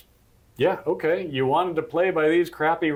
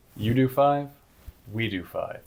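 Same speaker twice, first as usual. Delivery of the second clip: grand, heroic, declaiming delivery; 7 semitones lower than usual. Retelling a governor's reply to Texas: imitating a heroic declaration. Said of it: "in a heroic fashion".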